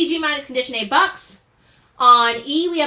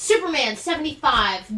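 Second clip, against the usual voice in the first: plain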